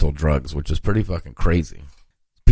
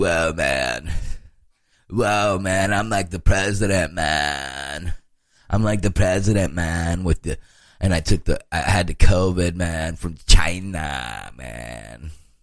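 slow, stretched surfer dude voice. Imagining how a man who isn't sick talks when he comes out: stereotypical movie surfer voice. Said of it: "talking like some stereotypical movie surfer".

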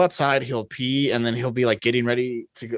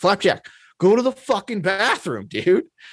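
put-on, high, swooping sing-song holler; 7 semitones higher than usual. Retelling how he sits out front and yells at flapjack, retelling a yell. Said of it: "I'm like yelling at them".

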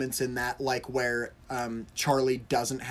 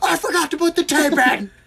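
put-on panicked scream, higher and louder; 11 dB louder than usual. Retelling a tv episode scene where a character panics: imitating a character screaming. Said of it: "he just screams".

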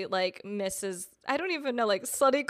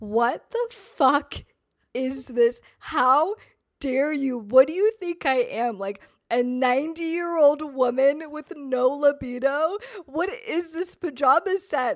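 mock sobbing, outraged, hysterical crying rant; 4 semitones higher, 4 dB louder than usual. Speaker retelling her reaction to a pajama set he gave her, acting out a hysterical crying rant. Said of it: "I was hysterical".

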